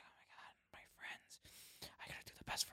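barely audible, very quiet, breathy whisper. Imitating an anime character who talks in a whisper: imitating a character's whisper. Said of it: "And he talks in a whisper".

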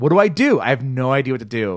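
put-on frantic, desperate, panicked shouting. Retelling being locked out with a burner on: retelling own panicked yelling. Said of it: "I was yelling".

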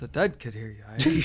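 very low grumbling mutter under the breath. Quoting a comedy film scene: imitating muttering under breath. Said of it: "Just muttering under his breath".

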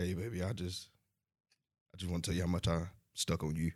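put-on seductive whisper, quiet and smooth. Trying the quiet storm voice again after a countdown. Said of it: "Why you whispering?".

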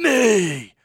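strong emphasis placed on the word "me". Correcting the other speaker on the delivery: stress on ME, imitating Batman. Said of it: "he emphasizes".

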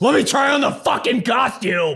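imitated drunk yelling. Imitating the other speaker when drunk: imitating a drunk person yelling. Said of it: "When you're drunk".

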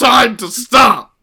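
shrill, very loud, high, all-out comedian-style yell. You have just told your co-speakers you can do the impression; do the Filthy Frank voice. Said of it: "I can do the filthy. Frank voice".

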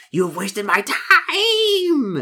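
very high, loud hissing creature voice, time drawn out. Narrator voicing a thing that hisses at the player: hissing creature voice. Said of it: "The thing hisses at you".

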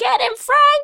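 very high-pitched, screeching woman's yell. Retelling a movie scene where a lady attacks Ernest: imitating a lady screeching. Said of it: "the lady is screeching".

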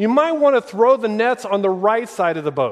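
high, loud yelling, projected far.

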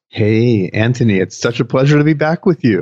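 seductive, sexy on-air host delivery. Guest [name] greeting host Anthony at the start of the show, sexy voice. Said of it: "is that your sexy voice".

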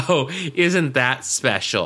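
plain

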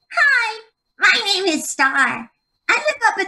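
very high little elf character voice. Voicing the little elf she played on a kids' music website, Star the little elf voice. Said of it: "I played the little elf, Star".

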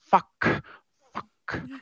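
grumbling mutter under breath. A player's character marches off the ship, muttering under breath. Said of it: "Just under my breath going".

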